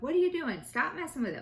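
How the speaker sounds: put-on yelling. Retelling yelling at a seven-year-old who was messing with a laptop: imitating own yelling. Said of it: "yelling at him".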